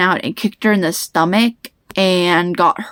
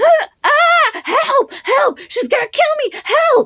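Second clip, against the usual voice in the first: put-on shrill, very high-pitched screaming. Retelling the pencil almost at the neck: imitating own past screaming for help. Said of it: "And I'm screaming for help".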